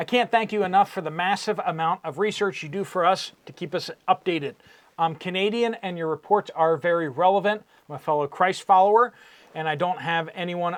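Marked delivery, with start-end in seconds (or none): none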